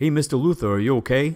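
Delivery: exaggerated cartoonish Brooklyn accent, pitched high. Quoting the security guard calling out to Mister Luther, in a cartoon Brooklyn accent. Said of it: "cartoon Brooklyn accent".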